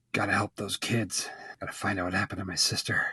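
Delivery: grave, deep, serious put-on voice, very soft, hushed. Imagining how the larger character would talk: serious character voice. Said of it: "she would probably have a kind of deep voice ... she would probably talk like this".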